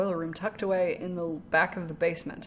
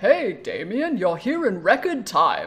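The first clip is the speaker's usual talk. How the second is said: loud, slow, swooping, sing-song, drawn-out character voice; 7 dB louder than usual. Voicing the character Hugo greeting Damien: Hugo voice. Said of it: "And then Hugo is".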